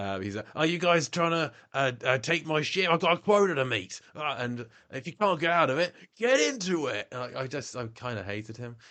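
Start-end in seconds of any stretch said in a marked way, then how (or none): 0.6-7.1 put-on high, raised, half-managed Australian accent. Describing a horrible Australian cast member, the speaker attempts his Australian accent. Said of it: "he's Australian. I can't do the accent".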